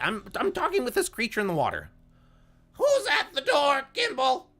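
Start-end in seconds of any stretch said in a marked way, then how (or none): 2.7-4.4 shrill, shrieking call. Telling the story, the speaker voices Freya addressing Gimbal, shrieking. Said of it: "just shrieking".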